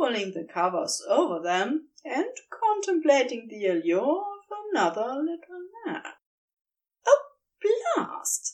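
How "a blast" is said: very high, more amused than annoyed exclamation. Narrator reads the husband's exclamation, sounding more amused than annoyed. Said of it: "sounding more amused than annoyed".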